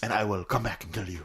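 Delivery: low, soft, mock Spanish accent. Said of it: "What are you, Renee Montoya?".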